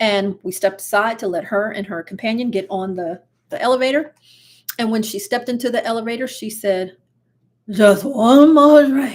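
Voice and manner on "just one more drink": put-on very loud, slow, slurred drunken drawl. Retelling what a drunk woman said in an elevator: imitating drunk slurring. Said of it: "She's slurring her words".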